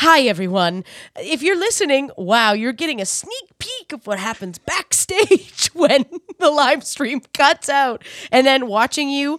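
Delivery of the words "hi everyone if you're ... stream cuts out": polished on-air presenter voice, show-host mode. Retelling the other speaker greeting listeners after the mic leak: imitating switch to show mode. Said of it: "go from full panic to show mode".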